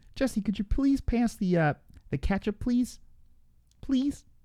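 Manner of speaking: very high cartoon frog puppet voice. Talking to Jesse, in a Kermit the Frog voice. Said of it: "with that voice".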